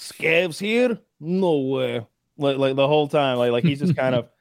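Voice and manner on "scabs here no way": very slow, broken, put-on Russian accent. Describing how his guy always talks, speaker quotes him in english with a russian accent. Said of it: "English with a Russian accent".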